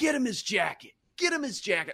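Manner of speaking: very high, impassioned, fired-up repeated scream. Retelling a quiet player getting fired up: imitating someone screaming.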